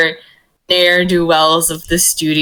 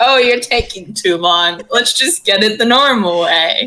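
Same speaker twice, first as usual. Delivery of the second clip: playful, needling teasing tone, in character; 3 semitones higher than usual. Voicing a character teasing another for taking too long: teasing in character. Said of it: "they start almost pointedly, like, punching in numbers, like, to fuck with Gil".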